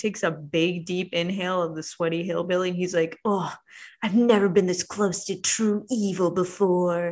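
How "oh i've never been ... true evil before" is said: creepy, unsettling delivery with eerie fascination. Retelling a scene where Chad sniffs a tied-up man: creepy Chad voice. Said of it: "very creepily gets all up in his business".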